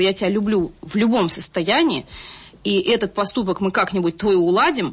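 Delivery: ordinary delivery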